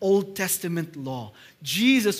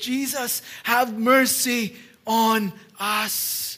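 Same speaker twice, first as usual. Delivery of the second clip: feeble, coarse, hoarse crying out, very slow; 3 semitones higher than usual. Telling the story, desperate people cry out to jesus, weak coarse crying voice. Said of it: "they cried with their weak and coarse voice".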